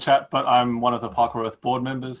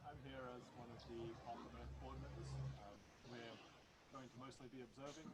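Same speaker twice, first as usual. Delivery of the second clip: speaking very softly, quieter; 34 dB quieter than usual. Introducing oneself on a group call to the other members: very quiet voice. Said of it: "your voice is very, very quiet".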